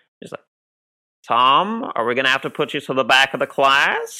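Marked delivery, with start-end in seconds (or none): 1.3-4.2 high, loud call as through a bullhorn. Retelling a director speaking over a bullhorn to an actor: David Lynch voice. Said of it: "David Lynch just says in his, like, great voice".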